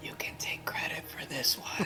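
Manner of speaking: whispered, barely voiced, close to the ear. Playing a character who leans to a guard's ear: whispering in character. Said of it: "you whispering that to him".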